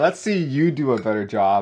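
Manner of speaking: normal talking voice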